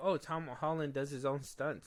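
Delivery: ordinary talk, nothing marked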